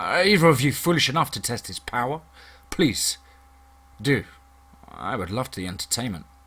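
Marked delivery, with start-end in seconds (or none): none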